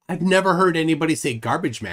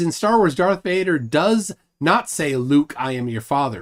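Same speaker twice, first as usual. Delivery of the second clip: plain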